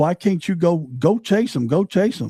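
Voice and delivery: mild, urging, high-pitched holler, toned down. Recounting a shooting, voicing the people on the yard, retelling people screaming.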